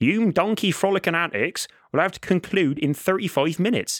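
put-on rural English accent, farmer-like voice. Narrating a game, the speaker voices the farmer calling to the donkeys: English country accent. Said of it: "that's an authentic English accent for the country".

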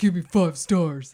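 very loud, forceful, pushy, aggressive tone. Host asking listeners for five-star reviews, aggressive, demanding voice. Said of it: "I'm being aggressive about it".

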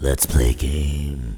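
very deep, eerie, creepy voice, word "game" drawn out. Taking turns trying out the line with others, saying it in a spooky voice. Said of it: "That was spookier though".

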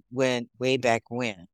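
normal talking voice

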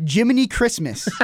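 mock, high, sudden, yelled-out outburst. Telling a story about a man knocked down in the corner, retelling a yell. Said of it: "just yelled out".

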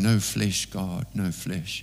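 play-acted tearful weeping cry. Retelling a recording of Kathryn Kuhlman at a meeting: imitating Kathryn Kuhlman crying. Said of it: "she was crying, saying".

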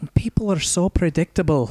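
put-on Scottish accent. Taking up a dare to redo the quote in a Scottish accent. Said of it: "I should have done that in my pitch perfect Scottish accent".

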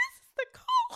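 very high, very loud, up an octave. A podcast co-host recalls saying her name on air, imitating her high-pitched voice. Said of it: "said it so high-pitched".

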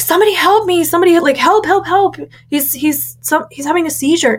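put-on panicked shout. Recalling a seizure in church, acting out her shout for help in the sanctuary. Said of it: "I shouted in the middle of the sanctuary".

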